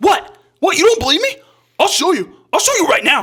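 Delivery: mock very high, loud, super-defensive outburst. Acting out a woman answering a skeptical audience member, acting out getting defensive. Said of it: "she gets like super, super defensive".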